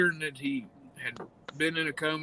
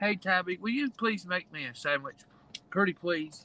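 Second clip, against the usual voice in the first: put-on meek, quiet, polite tone, higher pitch; 4 semitones higher than usual. Retelling how a sandwich was asked for instead of hollered: imitating a quiet polite request. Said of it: "it was more like".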